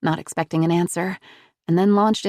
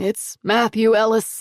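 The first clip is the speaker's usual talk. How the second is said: shaky, trembling voice, called out; 3 semitones higher than usual. Reading a grandfather calling out to the sheriff: calling out with a shaky voice. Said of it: "called out with a shaky voice".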